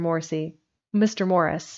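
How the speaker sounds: usual speaking voice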